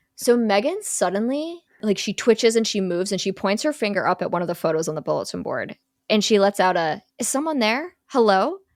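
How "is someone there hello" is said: put-on childlike, younger-sounding girl voice. Retelling a scene where a possessed girl calls out: younger-sounding girl voice. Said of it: "she makes herself a little younger".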